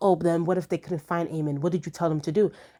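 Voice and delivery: ordinary talk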